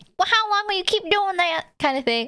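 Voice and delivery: put-on southern US accent, pestering tone. Imitating a woman who pesters the speaker about a hobby, put-on southern accent. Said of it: "I put her southern".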